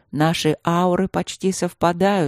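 ordinary delivery

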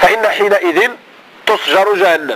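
plain

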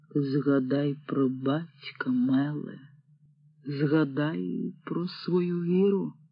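quiet voice. Narrator reads a man addressing a girl after a silence, quiet voice. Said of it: "почувся тихий голос Лага".

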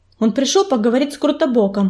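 plain reading voice

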